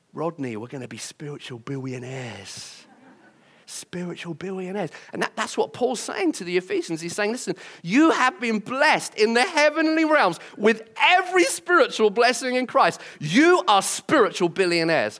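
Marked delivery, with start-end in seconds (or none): 0.2-5.0 put-on soft, low voice in North London Cockney accent. Imagining Del Boy telling Rodney about this passage, in North London Cockney. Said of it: "a nice kind of North London Cockney accent".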